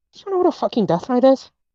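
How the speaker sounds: close, secretive, high, leaned-in half-whisper. Voicing a character who leans in closer to Silver: half-whispering in character. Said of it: "she'll lean in closer to whisper to Silver".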